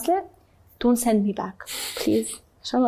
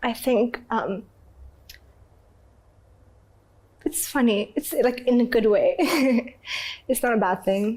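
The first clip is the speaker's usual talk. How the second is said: tearful, crying while talking. Explaining to another speaker why tears came: crying while talking. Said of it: "Why are you crying?".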